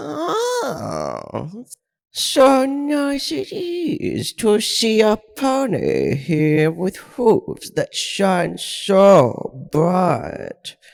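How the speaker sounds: faint, slow, eerie, echoing disembodied voice. Reading a story where a male figure's voice greets a pony: eerie, slightly reverberating male voice. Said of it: "and the voice of a male figure began to sound. / which seemed to slightly reverberate off itself, giving it a slightly eerie feel to it".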